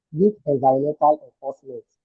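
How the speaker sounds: weak stressed with a falling tune. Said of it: "Emphasis on weak".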